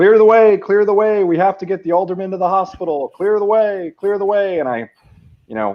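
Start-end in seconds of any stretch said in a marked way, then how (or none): 0.0-4.6 booming, very loud, very high announcing call. Retelling his changed form's announcement to onlookers about the alderman, retelling a very loud announcement. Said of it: "announce in a very loud voice".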